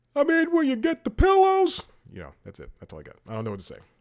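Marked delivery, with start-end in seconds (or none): 0.2-1.9 very loud, high-pitched, belted out. Joking about a Mike Lindell interview on CNN: Mike Lindell impression. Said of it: "that Mike Lindell interview impression".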